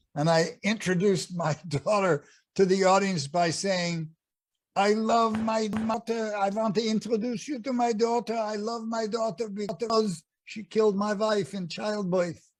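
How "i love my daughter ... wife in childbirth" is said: put-on Yiddish accent, pitched high. As Pantalone on stage, introducing his daughter to the audience, Pantalone's Yiddish accent. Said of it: "Pantalone had a Yiddish accent".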